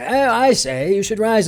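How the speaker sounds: put-on posh Oxford accent, pitched high. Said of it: "had an English accent because Jesus said it".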